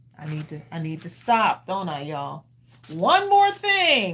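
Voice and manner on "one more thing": very high, raised voice with punched-up emphasis. Saying a catchphrase as Bill would: Bill voice. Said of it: "as Bill would say in my Bill voice".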